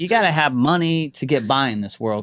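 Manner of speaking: ordinary delivery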